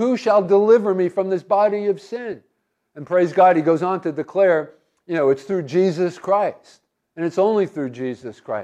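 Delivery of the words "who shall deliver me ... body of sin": ordinary delivery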